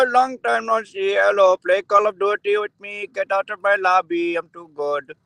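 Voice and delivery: high put-on Indian accent, played for laughs. Answering a request to say a greeting, put-on indian accent. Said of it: "Say it with the Indian accent".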